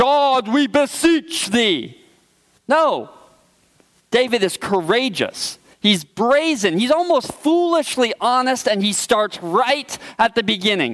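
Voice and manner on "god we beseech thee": slow, churchy pulpit-preacher intonation. The speaker mocks shallow spiritual language with an example: deep preacher's voice. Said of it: "that deep preacher's voice".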